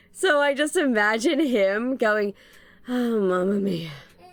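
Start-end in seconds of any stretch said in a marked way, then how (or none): 2.8-3.9 put-on exasperated panicked voice, lower. Imitating how a YouTuber would say the line: exasperated panic Michael Reeves voice. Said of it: "in that exasperated panic Michael Reeves voice".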